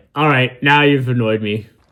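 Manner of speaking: put-on monster voice, dragon voice. Voicing the dragon in the scene being watched: put-on dragon voice. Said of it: "The dragon's like".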